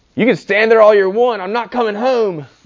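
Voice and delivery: put-on shrill, very high, very loud child's yell. Retelling a child refusing to come home: imitating a child yelling. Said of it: "the child yells".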